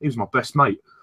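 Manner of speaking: imitated London Cockney accent. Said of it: "he goes".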